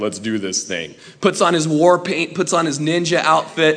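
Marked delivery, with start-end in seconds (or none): 0.0-1.0 very deep, low and quiet tough-guy voice. Speaker retelling Peter's turn after denying Christ, doing Peter's deeper voice. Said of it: "his voice gets deeper and he's like".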